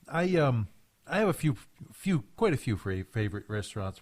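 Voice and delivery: stuttering, stammering and stumbling over the start. Listing favorite restaurants while talking with Tony, stuttering. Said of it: "I'm stuttering right now".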